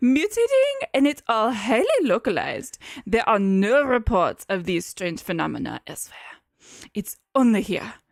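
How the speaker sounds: fake, put-on French accent, swooping. Voicing Doctor Marquez in a put-on French accent. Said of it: "like, French".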